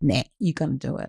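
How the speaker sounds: firm, no-nonsense teacher tone. Speaker demonstrating their different voices, using the firm no-nonsense teacher voice. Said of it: "my teacher voice where I just don't take shit".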